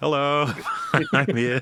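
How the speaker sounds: put-on droid voice. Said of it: "just K two S O with a rifle, like".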